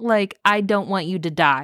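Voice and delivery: plain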